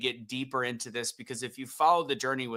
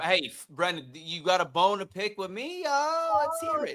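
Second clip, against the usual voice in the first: put-on New Jersey accent with raised pitch; 7 semitones higher than usual. Replying to brendan, who has a bone to pick, in a put-on jersey accent. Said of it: "stuck in this accent for the rest".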